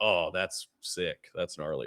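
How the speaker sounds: mock stoned dude voice, marveling. Imitating stoned people dreaming up sci-fi ideas: imitating a stoned person. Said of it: "people just being stoned and basically being like".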